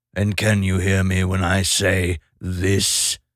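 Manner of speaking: sepulchrally deep, low, tomb-like voice. A talking bird tests whether Random can hear it: sepulchrally deep voice. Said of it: "in a sepulchrally deep voice".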